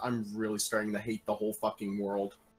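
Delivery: very quiet, barely voiced, hushed under-breath mutter. A player voices her character, staring at the sorcerer and paladins, muttered under her breath. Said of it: "mutters under her breath".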